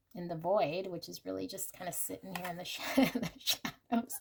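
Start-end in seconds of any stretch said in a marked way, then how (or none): 2.9-4.2 giggling, laughing through the words. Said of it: "Sorry, I'm laughing".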